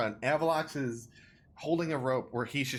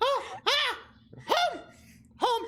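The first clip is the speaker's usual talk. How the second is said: terrified kobold voice, higher; 4 dB louder than usual. Voicing a terrified kobold hanging on a rope, pointing at the cave: terrified kobold. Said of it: "he's terrified and dumb".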